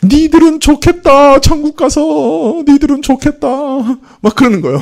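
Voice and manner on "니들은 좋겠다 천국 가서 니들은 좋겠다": put-on sobbing wail, very high and slow. Retelling what a possessed person said while crying: imitating someone crying while speaking. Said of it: "막 울면서 하는 얘기가".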